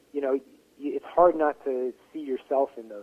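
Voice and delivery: ordinary talk, nothing marked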